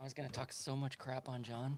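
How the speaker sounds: hushed, very soft half-whisper. Talking about John, who can hear through wireless headphones, half-whispering. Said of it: "I don't know why I'm whispering".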